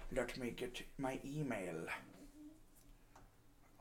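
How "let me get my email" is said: soft, slow movie-villain voice, villainous. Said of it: "I'm talking like I'm a villain in a superhero movie".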